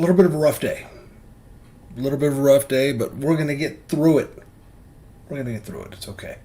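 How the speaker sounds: teary, high crying voice. Speaker greets the girls and admits to crying; speak while crying. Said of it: "I I am crying".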